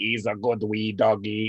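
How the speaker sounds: very slow, low, flat, monotone robotic Irish voice. Retelling meeting an old man walking his dog: imitating robotic voice-box voice with Irish accent. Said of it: "robotic voice with an Irish accent".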